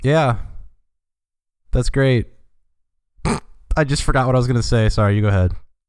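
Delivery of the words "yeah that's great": not sounding sincere. Replying to someone who just praised a game, insincere. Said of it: "You don't even sound sincere".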